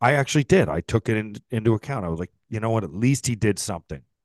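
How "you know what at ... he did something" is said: usual speaking voice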